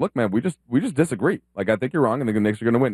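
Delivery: ordinary delivery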